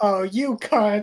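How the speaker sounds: loud yelling, shouting. Player's character reacting to Gnora's betrayal, yelling. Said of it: "I yell".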